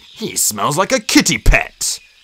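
dismissive delivery with a snort. A warrior remarks to Greypaw about the new apprentice: snorting. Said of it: "snorted the warrior".

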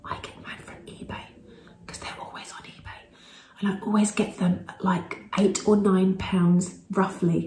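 hushed whisper. Sharing a tip about where you buy a product, whispering. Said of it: "I don't know why I'm whispering".

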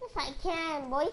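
high-pitched voice. Arguing back during a game, insist you can in a high-pitched voice. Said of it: "Why is your voice so high pitch?".

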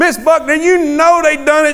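loud, high-pitched pleading shout. Re-enacting my past self protesting to miss buckner, retelling a loud plea. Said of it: "I'm like way up here in the volume".

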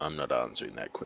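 hushed, creaky, rasping, barely above a murmur. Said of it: "He'd just say".

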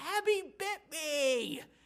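mock very high, tearful child's shriek. A father retells his crying son screaming about his sister: retelling a scream.

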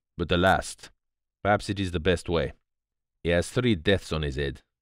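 ordinary talk

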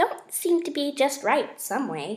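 plain

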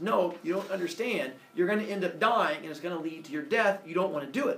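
plain

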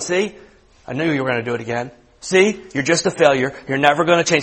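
mock nagging, accusing, condemning voice. Acting out the voice that comes in after you mess up: put-on accusing inner voice. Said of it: "it's that voice that kind of comes in right away and starts going".

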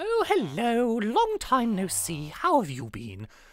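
posh lady voice, sing-song, swooping up and down. Reading out Charlotte's greeting from an old record: Charlotte posh lady voice. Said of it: "she sounds like a posh lady".

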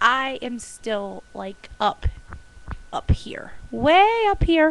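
loud, slow, high, soaring elation.

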